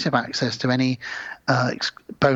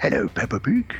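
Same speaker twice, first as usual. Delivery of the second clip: put-on cartoon father voice. After sounding like Daddy Pig, the speaker greets Peppa Pig: Daddy Pig impression. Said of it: "a good Daddy Pig impression".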